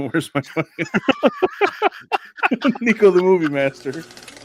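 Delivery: laughing through the words.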